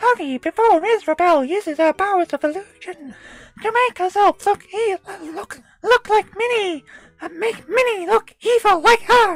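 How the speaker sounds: pitch pushed way up and belted. Reading the game's story text aloud in a Mickey Mouse voice. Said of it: "as close as I can get to, uh, a Mickey Mouse voice".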